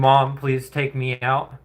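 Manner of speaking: mock begging and pleading cat voice. Voicing a cat that wants to be taken out: imitating a cat begging and pleading. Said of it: "begging and pleading".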